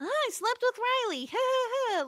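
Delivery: put-on very high, sugary, cutesy baby-voice tease. Retelling how a character taunts Buffy in the episode: mock-cutesy voice. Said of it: "cutesy way".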